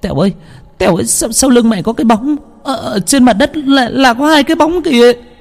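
trembling, shaky, quivering voice. Reading a story, the narrator voices a girl speaking to Tèo: trembling voice. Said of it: "giọng run rẩy".

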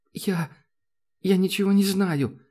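trembling voice. Interrogated by a security officer, a girl answers in a trembling voice. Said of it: "дрожащим голосом откликнулась девушка".

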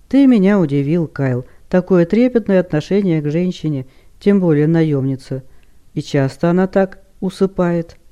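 plain

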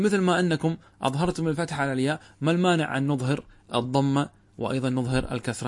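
ordinary delivery

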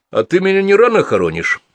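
very high, loud, shrill, snide sneering. Gordey answers Lev's warning to stay home, asking snidely. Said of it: "ехидно поинтересовался Гордей".

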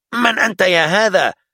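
very high, loud shouting. A soldier at the execution ground challenges a strange man, shouting. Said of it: "صاح أحد الجنود".

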